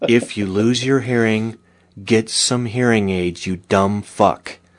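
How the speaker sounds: calm, unruffled public-radio announcer voice. Podcast host delivers a public service announcement to listeners, NPR voice. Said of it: "in our NPR voice".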